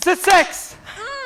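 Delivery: very high, loud, jubilant victory whoops.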